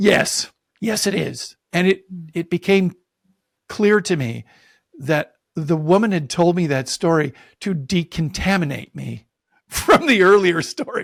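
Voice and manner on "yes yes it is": very slow, deliberate, emphatic, insistent delivery. Telling a story, recalling answering a woman's question: retelling a very loud reply. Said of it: "And I said in a very loud voice".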